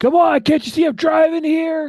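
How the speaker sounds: shrill, very loud, high-pitched all-out shout. Voicing a speeder who slows down for someone crossing the street: yelling. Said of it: "slows down and yells".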